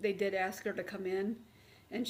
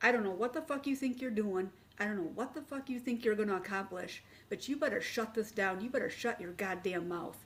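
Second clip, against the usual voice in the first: mock vicious, venomous, hostile delivery. Retelling how a woman verbally attacked the speaker, mock-venomous attack. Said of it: "she came at me with venom".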